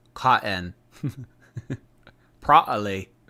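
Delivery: British pronunciation. Listing a three-pack's scents, saying the words as British people would, in a British accent. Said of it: "That's like the the British people".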